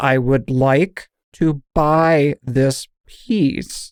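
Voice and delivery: very robotic voice, each word stretched and drawn out. Retelling how a woman finally said it to them: very robotic, drawn out. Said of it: "in a very robotic, drawn out way".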